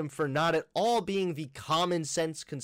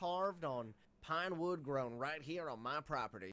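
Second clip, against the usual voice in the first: very quiet, hushed, fake Southern accent; 12 dB quieter than usual. Presenting wooden American flag carvings, mock Southern accent. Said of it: "Why did he feel the need to do that accent?".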